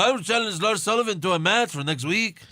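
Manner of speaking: put-on Latin American accent. Quoting a wrestler's challenge for next week: imitating No Way Jose. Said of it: "you can use a Latin American accent".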